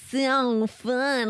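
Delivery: goofy, overdone, exaggerated Midwestern twang. Showing how her own midwest twang sounds on the podcast: exaggerated midwest twang. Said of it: "my Midwest twang".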